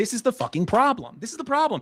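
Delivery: fired-up, heated, emphatic ranting. Ranting about a problem, yelling. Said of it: "I'm yelling a little too much".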